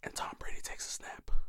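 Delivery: mock hushed commentator voice. Joking about football broadcast like golf: imitating a whispering commentator.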